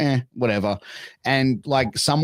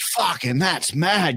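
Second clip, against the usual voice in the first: as broad bogan voice as possible, higher; 5 semitones higher than usual. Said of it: "as bogan as you can".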